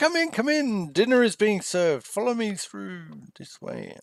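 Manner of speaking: very high, cheerful, jolly host voice. Voicing someone inviting the party in to dinner: jolly voice. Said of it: "a jolly voice".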